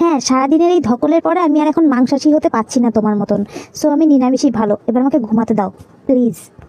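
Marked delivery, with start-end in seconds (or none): none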